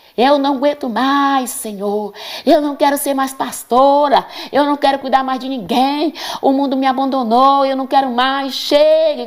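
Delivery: put-on high, bratty, fed-up, petulant kid tantrum voice. Retelling crying out to God alone in the bedroom: imitating own past tantrum shouting. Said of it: "gritando. Eu fiz igual um menino birrento".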